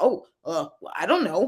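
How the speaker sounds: put-on sarcastic voice. Retelling how coworkers answered on calls: imitating coworkers being sarcastic. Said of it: "just being real sarcastic and being like".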